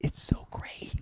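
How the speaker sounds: breathy, hushed whisper, spoken close. Retelling what she turned and said to them: imitating someone whispering. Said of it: "She's whispering this to me".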